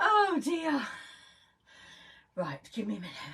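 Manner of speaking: out of breath. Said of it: "I've got to get my breath back now".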